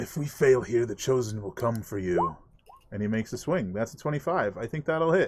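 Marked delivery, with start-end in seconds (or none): 0.0-2.4 menacing, snarling voice. Voicing a foe who snarls at Sterling before swinging, snarling. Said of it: "He snarls at you".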